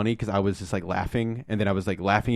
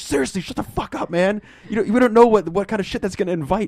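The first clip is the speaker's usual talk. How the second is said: acted, very high, loud, panicked, terrified voice; 12 semitones higher, 5 dB louder than usual. Retelling the courtroom movie scene, imitating a terrified Mark Wahlberg. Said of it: "the terror on his face".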